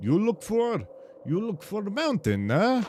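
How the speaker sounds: put-on Russian inflections, Russian-like accent. Imitating how their lines sound in the speaker's head: Russian-like accent. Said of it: "I have their accents in my head always as Russian because they make really Russian like inflections".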